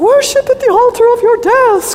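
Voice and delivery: very high, loud, screechy, shrill voice. Recalling a teacher's chapel talks, the speaker imitates her in a screechy voice. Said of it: "kind of screechy voice".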